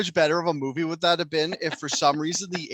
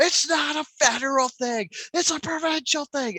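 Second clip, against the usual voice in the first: put-on very high, furious screaming; 11 semitones higher than usual. Describing a video of a man screaming at a convoy, imitating his screaming. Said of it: "He's just like screaming at the convoy".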